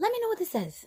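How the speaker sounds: excited, high, loud rush of words. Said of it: "And I was like".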